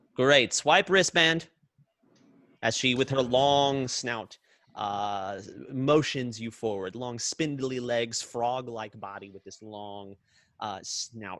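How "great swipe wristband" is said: put-on high, very loud creature voice. Voicing a frog-like receptionist creature greeting guests at the door: put-on receptionist creature voice. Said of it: "I just don't remember what voice I gave her last time".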